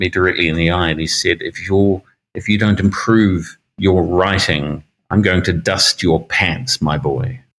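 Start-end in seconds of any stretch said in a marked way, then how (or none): 1.4-7.4 pointed, direct, personal tone. Quoting a man who leaned over his work and looked him in the eye, retelling a very quiet warning. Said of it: "he said very, very quietly".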